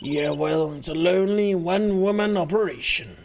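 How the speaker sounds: sibilant, hissy snake voice. The editor-in-chief character answers a compliment on her title, in a snake voice. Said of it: "the snake voice whenever she's in the cardboard box".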